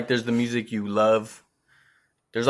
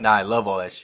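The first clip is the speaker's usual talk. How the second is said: usual speaking voice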